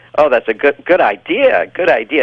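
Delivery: excited gushing, full of wonder and admiration. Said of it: "It's just that tone of voice".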